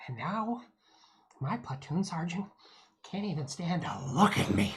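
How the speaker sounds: put-on, laid-back, drawling voice. Trying a voice for a character who tells a scar story: Owen Wilson voice. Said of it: "do Owen Wilson as a voice for the character".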